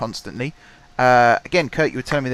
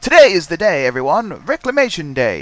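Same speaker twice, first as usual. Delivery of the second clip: loud, raised, put-on news anchor delivery; 5 semitones higher, 6 dB louder than usual. At the terminal, doing a best newscaster voice for an announcement. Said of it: "Shall I do my best newscaster voice?".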